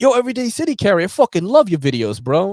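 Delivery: put-on loud, very high, heavy New York City accent. Retelling how a buddy greeted him at a knife show, in G-Man's crazy New York accent. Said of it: "he had like the craziest New York City accent".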